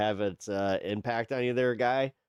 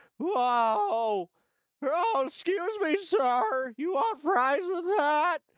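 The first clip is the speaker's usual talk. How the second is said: put-on cracking teenage voice, higher pitched. Mocking a commentator's voice as it cracks like a teenager: Ben Meiselas voice cracking like a teenager. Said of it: "he starts cracking like a teenager".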